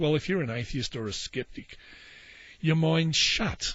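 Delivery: normal talking voice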